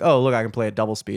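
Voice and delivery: normal talking voice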